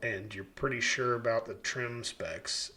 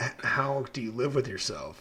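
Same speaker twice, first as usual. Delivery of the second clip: put-on sarcastic male voice, scolding. Retelling a scolding over unfinished homes from the guy who raised me: imitating a sarcastic guy. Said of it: "I was raised by a very sarcastic guy".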